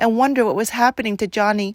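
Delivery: plain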